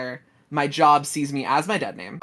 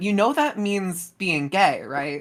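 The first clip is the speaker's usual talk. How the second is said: mock voice full of disgust, slow; 4 semitones higher than usual. Recalling a mom looking over at a rainbow flag, the speaker retells a disgusted remark. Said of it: "in a disgusted voice".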